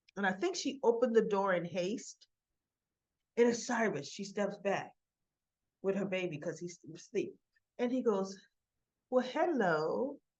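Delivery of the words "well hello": mock eerie, creepy charm, quieter. Retelling a visitor's greeting at the door: imitating eerie creepy charming talk. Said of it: "he talks when he's trying to be that eerie, creepy, charming".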